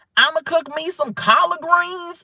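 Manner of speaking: exaggerated Southern accent. Imitating a woman who changes her accent in interviews, exaggerated Southern accent. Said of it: "She don't sound like that regular".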